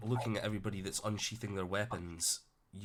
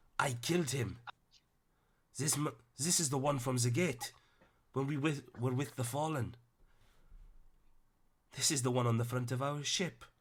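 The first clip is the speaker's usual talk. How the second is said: put-on Welsh accent slipping in, pitched up; 5 semitones higher than usual. Voicing a character who points at Emrys, slipped into Welsh accent. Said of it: "I don't know why he turned Welsh there".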